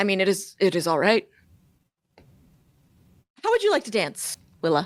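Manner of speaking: solemn, very serious tone. A game master voices a character asking Willa to dance, very serious. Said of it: "Looks at you very seriously and goes".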